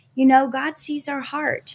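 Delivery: ordinary delivery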